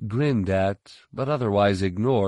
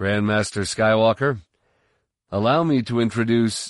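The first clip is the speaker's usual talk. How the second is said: ordinary delivery, nothing marked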